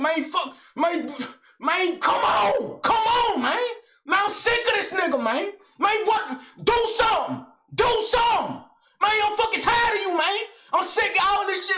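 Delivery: very high, all-out screamed tirade. Retelling how an angry man dared the speaker to fight: imitating someone screaming. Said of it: "he just screaming his ass off".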